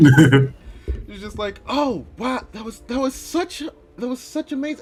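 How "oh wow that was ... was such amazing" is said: tearful in-character voice, crying while speaking, higher. Voicing a princess crying after watching a dance: tearful in-character voice. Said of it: "rolling down her eyes".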